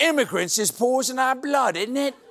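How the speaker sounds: exaggerated fake Cockney accent. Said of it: "in a bad Cockney accent".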